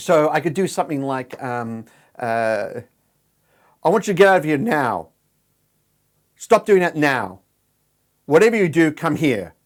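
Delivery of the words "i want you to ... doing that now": commanding tone, pitch falling on final now. Showing how a command sounds, pitch dropped at the end. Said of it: "I've dropped the pitch of my voice at the end. That's a command".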